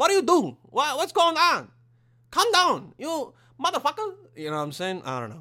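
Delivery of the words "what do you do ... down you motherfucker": high, loud mock Chinese accent. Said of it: "It's more like".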